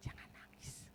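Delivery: whispered, very soft, gentle comforting tone.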